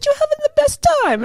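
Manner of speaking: high-pitched, fake made-up Italian accent. Retelling what the husband said, in a made-up Italian-sounding accent. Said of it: "I don't know what the hell that accent was".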